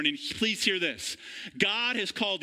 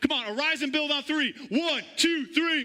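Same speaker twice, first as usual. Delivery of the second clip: high, fired-up, pumped-up hype voice; 7 semitones higher than usual. Acting out calling people to build together, with put-on locker room hype. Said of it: "It's my locker room hype".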